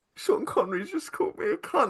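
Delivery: really upset voice, pitched very high. Retelling an actor's reaction to being insulted on set: imitating Jason Flemyng upset.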